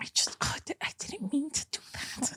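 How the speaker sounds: flustered, overwhelmed, fumbling whisper. Acting out how people sound when overwhelmed: imitating someone flustered. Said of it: "my impression of everyone when they're when they're um like flustered".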